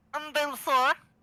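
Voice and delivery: doing a voice. Podcaster tries out voice acting for his co-hosts, in a put-on voice. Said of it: "I hate myself for doing that voice I just said".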